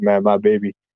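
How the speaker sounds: put-on sad, forlorn, heartsick, longing tone. Retelling what he said on the plane, imitating himself being sad. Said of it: "And then I got all sad".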